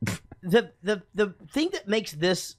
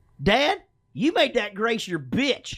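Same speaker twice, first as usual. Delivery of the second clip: put-on childlike high pitch; 5 semitones higher than usual. Comparing two movies by doing a line from each: Talladega Nights kid impression. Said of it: "first I'll go Talladega Nights".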